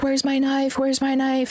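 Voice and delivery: acted, frantic, insistent, high-pitched, repeated words. Retelling a woman who cut herself after cops took her knife, imitating her freaking out. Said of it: "And freaking out".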